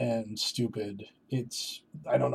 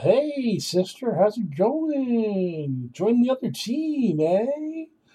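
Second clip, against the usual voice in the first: sarcastic, put-on jovial, very high, swooping fake cheer; 11 semitones higher than usual. Criticizing how characters greet a woman who abandoned her daughter, mock jovial tone. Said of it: "way too much kind of jovial".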